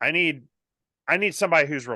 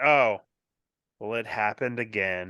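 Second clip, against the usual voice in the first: put-on mopey voice, lower pitch; 5 semitones lower than usual. Retelling his phone call after he got fired again, imitating Eeyore. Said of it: "Like he sounded like Eeyore".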